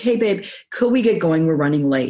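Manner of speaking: acted, kind, warm tone. Showing how she asks her partner to hurry: imitating her own warm tone. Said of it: "use a warm tone of voice".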